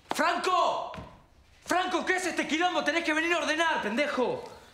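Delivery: loud shouting, pitched high. In a drama scene, a character calls out to Franco: shouting. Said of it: "dejá de gritar".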